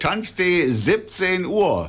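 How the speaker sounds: slow, high, spelled-out delivery.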